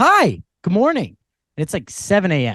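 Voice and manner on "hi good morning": high, excited voice with chaotic energy. Retelling a woman on a shuttle greeting at 7 am: imitating an excited greeting. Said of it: "kinda chaotic energy. Clearly going on vacation, excited about it".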